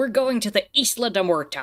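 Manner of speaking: loud, clumsy, awful movie pirate Spanish pronunciation. Chatting about pronouncing a Spanish name, in Pirates of the Caribbean Spanish. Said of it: "straight up Pirates of the Caribbean uh, Spanish".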